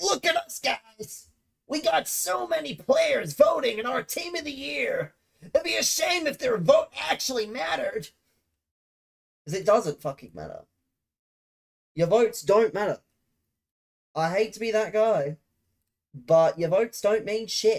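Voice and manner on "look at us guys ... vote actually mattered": imperfect put-on American accent, very high pitch. Mocking EA in a put-on American accent. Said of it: "Decent American accent?".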